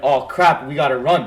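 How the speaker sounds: ordinary talk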